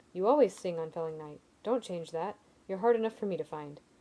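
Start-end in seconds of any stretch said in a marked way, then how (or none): none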